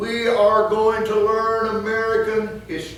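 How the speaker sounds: high, loud, stern, commanding voice.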